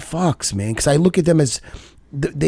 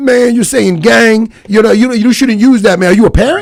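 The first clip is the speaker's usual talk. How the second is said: put-on raised, higher older man voice; 6 semitones higher, 8 dB louder than usual.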